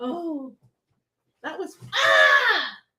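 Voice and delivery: very slow, high, stretched-out, drawn-out yell. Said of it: "Why'd you yell like that?".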